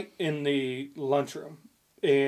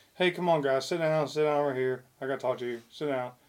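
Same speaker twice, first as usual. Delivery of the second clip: put-on super-calm tone, quieter; 6 dB quieter than usual. Retelling how a man called the guys in to talk, imitating super calm talk. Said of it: "he's all super calm".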